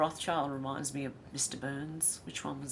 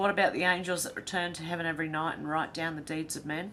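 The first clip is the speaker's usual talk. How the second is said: ordinary delivery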